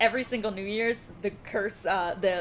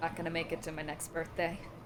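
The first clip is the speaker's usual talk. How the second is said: barely-there, hushed, very quiet and faint delivery; 4 semitones lower, 8 dB quieter than usual. Voicing a character's line heard by the group: said very quietly. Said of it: "You guys hear very quietly".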